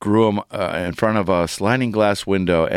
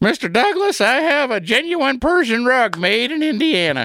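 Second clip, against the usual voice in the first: very high-pitched, folksy sitcom-style voice. Before going to break, the host does his imitation of Mr. Haney. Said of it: "my imitation of Mr. Haney from Green Acres".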